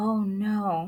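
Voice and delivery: very soft and hushed, under the breath. Reading a story aloud, a character reacts to news of a death in a real soft voice. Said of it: "Amanda said in a real soft voice".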